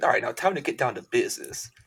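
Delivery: put-on woman character voice.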